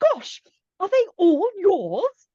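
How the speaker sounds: very high, exaggeratedly English accent. Retelling a woman's remark on seeing all the children, going very English. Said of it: "she went very English".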